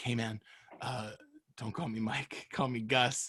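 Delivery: very quiet, slow, drawn-out whisper. Retelling what the other speaker whispered that night: imitating a whisper. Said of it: "whispered to me and you were like".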